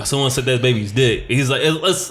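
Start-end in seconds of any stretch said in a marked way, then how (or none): none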